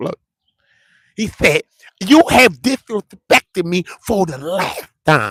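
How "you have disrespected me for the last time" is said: high, slow, drawn-out, weighty, deliberate delivery. Repeating the quote to prove the impression: Shannon Sharpe impression. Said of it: "Tell me that I don't sound like Shannon Sharpe".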